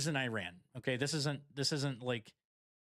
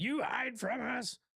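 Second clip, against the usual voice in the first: mock, very high, drawn-out, screeching scream; 10 semitones higher than usual. Retelling what a guy in a video yelled: imitating someone screaming. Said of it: "this guy screaming around".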